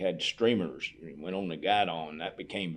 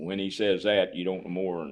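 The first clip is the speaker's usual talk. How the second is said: normal talking voice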